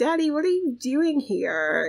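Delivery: high, fake astonished voice. Voicing a game character greeting her dad: acting surprised. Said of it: "she's all trying to act surprised".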